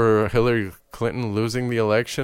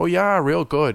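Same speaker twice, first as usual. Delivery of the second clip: put-on Midwest accent, pitched up, on real good; 6 semitones higher than usual. Imitating how someone from the Midwest should talk: imitating a Midwest accent. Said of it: "they come from the Midwest where they should be talking".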